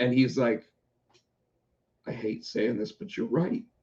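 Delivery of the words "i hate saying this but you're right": put-on hushed whisper, on the verge of crying. Retelling what Jason said when admitting someone was right: imitating Jason near tears. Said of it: "you sounded like you were gonna cry".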